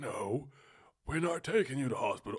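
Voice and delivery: really bad, loud cartoon character voice. Retelling a SpongeBob episode where someone refuses the hospital; really bad cartoon impression. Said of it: "That was a really bad impression".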